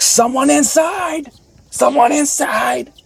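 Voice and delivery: mock very high, very slow, drawn-out furious angry yell. Retelling a player's angry call in a pickup game: imitating an angry yell. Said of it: "This dude got hella angry".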